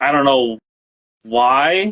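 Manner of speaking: clearly displeased, slow, unhappy tone. Explaining that a studio chose another director over a pitch: unhappy. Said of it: "you don't sound happy about that".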